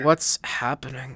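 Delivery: confused, bewildered tone of voice. Voicing a confused person in the dark: confused voice. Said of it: "heard a confused person saying".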